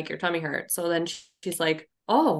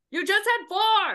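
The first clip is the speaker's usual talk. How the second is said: put-on screaming voice, pitched higher. Imagining a future scene where Al screams over a cookie: imitating Al screaming. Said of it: "over there screaming at him".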